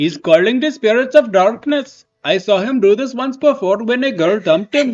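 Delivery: put-on Indian accent. Reading a Markl line from the movie: Markl with an Indian accent. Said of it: "maybe Markle can be Indian".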